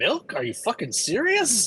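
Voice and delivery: high character voice with pitch swooping up and down. Voicing Dimble reacting from the back to a milk order: Dimble's voice. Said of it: "you hear Dimble's voice go".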